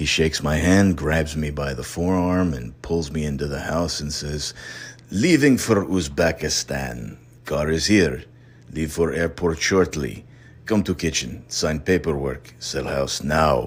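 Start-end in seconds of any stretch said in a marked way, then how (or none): 5.1-13.7 put-on strong Russian accent. Retelling what a man said pulling him into the house, Nikolai Volkov's heavy Russian accent. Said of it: "a Russian looking gentleman with a heavy accent".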